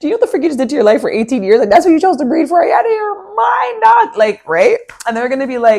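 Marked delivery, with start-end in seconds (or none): 0.0-4.2 play-acted crying-laughing, high, laughing through words. Acting out a reply to someone who wanted to hurt you: mock laughing while talking. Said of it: "you're going to start crying, laughing".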